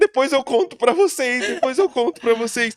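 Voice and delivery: mock weeping, emotional, high, loud, tearful. Speaker acts out what he said at the table back then: retelling himself crying.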